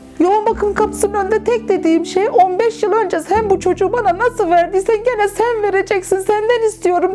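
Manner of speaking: desperate, shouted, pleading voice. A mother retells what she shouted at the intensive care door: retelling a desperate shout. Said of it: "diye bağırdığımı biliyorum".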